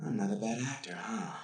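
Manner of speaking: sad voice with a crying catch.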